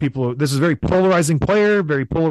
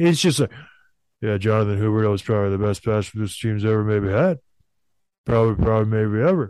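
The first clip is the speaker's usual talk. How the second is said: put-on flat deadpan voice, lower and slower; 7 semitones lower than usual. Showing how a man talks in such a farmer's way, imitating a flat, emotionless voice. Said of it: "That was a pretty good impression".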